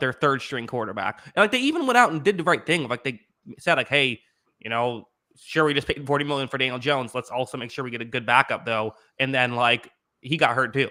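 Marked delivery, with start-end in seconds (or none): none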